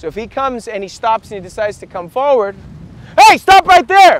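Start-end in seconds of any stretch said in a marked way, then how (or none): 3.2-4.2 very high, very loud, aggressive barked shout. Demonstrating stopping an approaching attacker, aggressive like you mean it. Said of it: "I say it with aggression like I mean it".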